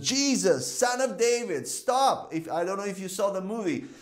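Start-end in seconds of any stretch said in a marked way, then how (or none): 0.1-2.3 mock slow, drawn-out, hard calling shout. Retelling the blind man calling to jesus by the road: imitating someone shouting. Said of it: "who was shouting for Jesus".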